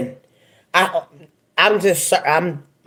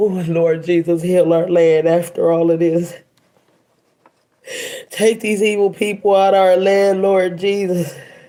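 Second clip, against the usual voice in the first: crying, tearful delivery. Speaker praying after hearing of a family losing their baby, crying while praying. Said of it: "I'm crying tears".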